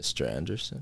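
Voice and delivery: very quiet, hushed, low, barely audible movie-villain voice. Chatting about The Matrix, the speaker tries an Agent Smith impression. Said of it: "Give me your no. best, Mr. Anderson".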